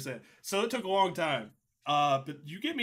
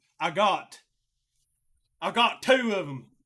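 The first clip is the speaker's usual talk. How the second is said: very slow, loud Kentucky accent slipping through; 3 semitones higher, 6 dB louder than usual. Talking about Halo with others, Kentucky accent coming out. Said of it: "my Kentuckyisms are coming out".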